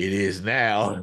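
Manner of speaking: mock dead serious, solemn delivery. Retelling a teammate's reply to a question: imitating Steph's serious tone. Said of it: "gets all real serious and was like".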